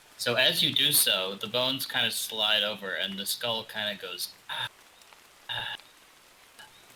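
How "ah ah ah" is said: creepy gasping sound, quieter. Voicing a skull as the carpet is lifted: skull's creepy gasp. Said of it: "in a sort of creepy gasp".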